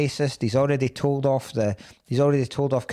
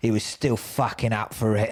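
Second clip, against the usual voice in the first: put-on film voiceover narrator voice; 3 semitones lower than usual. Retelling a film scene's closing narration: Danny Dyer voiceover impression. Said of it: "Danny Dyer's voiceover comes".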